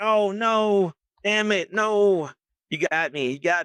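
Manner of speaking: dismayed voice.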